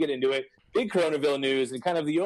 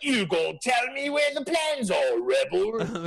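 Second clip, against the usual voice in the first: put-on high-pitched British accent; 8 semitones higher than usual. Describing an actor's lines in unused cuts to someone who never heard them, Darth Vader with a British accent. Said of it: "he's got his like British accent. He's like".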